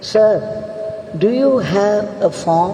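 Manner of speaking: plain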